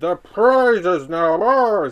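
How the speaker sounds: very loud, booming sea-creature voice. Reading a Castle Grayskull story aloud, Merman boasting to Skeletor, Merman voice. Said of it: "That's how Merman talks".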